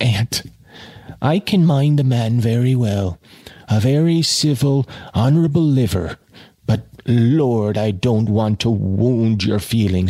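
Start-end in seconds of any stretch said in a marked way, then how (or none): none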